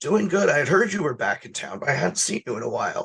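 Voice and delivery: heavy, lifelong chain smoker's character voice. In a role-play scene, the speaker talks as Uncle Frank, Uncle Frank voice. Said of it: "I have the perfect Uncle Frank voice".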